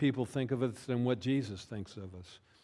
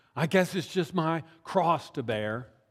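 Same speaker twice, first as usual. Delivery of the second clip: self-pitying, put-upon whiny voice; 4 semitones higher than usual. Speaker demonstrating how people misuse the phrase about bearing one's cross: whiny voice. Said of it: "with a whiny voice we say".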